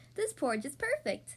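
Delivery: ordinary delivery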